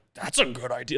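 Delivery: sincere, earnest, straight, not sarcastic. Retelling what the golfer said, imitating the golfer's voice. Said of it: "Don't do the voice".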